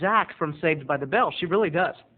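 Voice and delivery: ordinary talk, nothing marked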